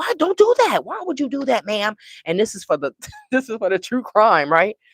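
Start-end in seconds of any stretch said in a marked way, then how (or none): 0.0-2.0 mock high, loud hollering. A true crime fan re-enacts yelling at the tv. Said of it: "I be yelling at the TV like".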